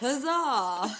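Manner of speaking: very loud, high, energetic, all-heart cheer. Saying the cheer word again after being asked: straight face, lots of energy. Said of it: "say it with a straight face, but lots of energy".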